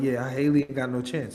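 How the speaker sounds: put-on voice, laughing while talking. Retelling how another woman mocked the rival, imitating Ellie laughing while talking. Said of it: "Ellie's just laughing like".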